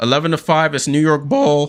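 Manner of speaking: breaking, cracking voice mid-line. A broadcaster reads out the score as the broadcast resumes, voice cracking. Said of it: "voice just cracked there".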